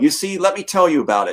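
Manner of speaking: ordinary talk, nothing marked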